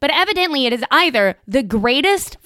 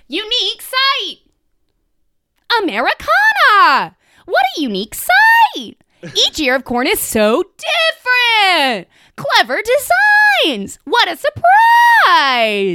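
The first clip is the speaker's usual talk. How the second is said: over-the-top excited gushing, every line exclaimed, swooping high; 8 semitones higher, 4 dB louder than usual. Reading aloud a five-star review full of exclamation points, over-the-top excited. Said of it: "Every single one of those sentences has 4 exclamation points, and I really wanted to read it that way".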